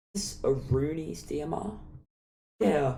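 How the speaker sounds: voice cracking and breaking up mid-line. Discussing which game weapons to rank, asking a question, voice cracking. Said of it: "that was a weird voice crack".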